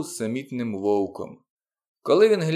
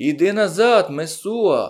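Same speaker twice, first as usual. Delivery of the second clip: loud, high, bellowing, roaring crowd-like cry; 5 semitones higher, 5 dB louder than usual. A narrator voices a whole crowd at once, crowd roaring. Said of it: "заревла громада".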